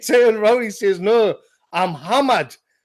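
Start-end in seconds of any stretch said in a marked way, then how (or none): 1.0-2.5 put-on broad, strong Geordie accent. Retelling a drunk friend's words at a hotel bar: broad geordie accent. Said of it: "obviously a broad Geordie accent".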